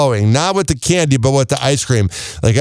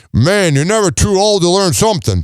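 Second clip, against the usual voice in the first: failed attempt at a New York accent; 3 semitones higher than usual. Retelling what an old guy watching the speaker said, attempted new york accent. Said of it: "I can't even do the accent, but I'll try".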